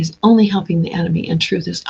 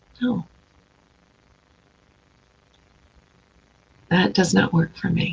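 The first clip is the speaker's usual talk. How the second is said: calm, quiet, plain, unemotional delivery; 6 dB quieter than usual. Showing listeners how to say no: a flat, unemotional refusal. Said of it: "Without emotion".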